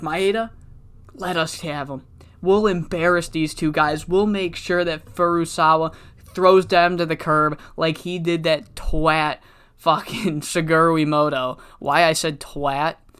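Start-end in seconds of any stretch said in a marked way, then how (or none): none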